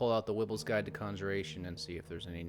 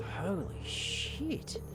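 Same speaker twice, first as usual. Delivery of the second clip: muttered quietly under one's breath; 12 semitones higher than usual. Reacting in character to a teleportation circle: muttered under breath. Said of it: "I'll say under my breath".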